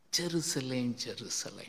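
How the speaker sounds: tender, affectionate, loving voice, low pitch. Acting out Jesus calling out to Jerusalem, retelling in a loving voice. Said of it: "Jesus is coming with the loving voice".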